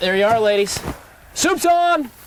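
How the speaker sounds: high-pitched, rising shouted yell. Scattering food in the trough and calling out to the ladies, yelling. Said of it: "Sorry, didn't mean to yell".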